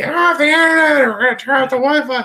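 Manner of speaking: very high, shrill, loud yelling woman's voice. Recalling team battles cut short, imitating a player's mom screaming at them. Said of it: "you hear like the mom screaming".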